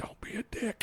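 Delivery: very quiet, hushed whisper. Retelling words said into his ear as fans lined up: retelling a whisper. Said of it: "I'm whispering in his".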